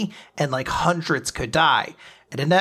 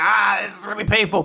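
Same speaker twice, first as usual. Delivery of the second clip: put-on pained cry of hurt; 5 semitones higher than usual. Retelling a comic scene where a character is in pain: imitating someone screaming in pain. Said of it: "She is screaming".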